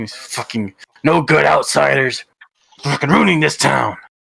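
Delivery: angry, growled under the breath. Voicing a man who approaches the players: growling under breath, swearing. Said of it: "growling under his breath and swearing".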